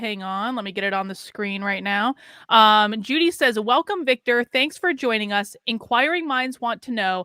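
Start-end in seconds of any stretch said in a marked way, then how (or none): none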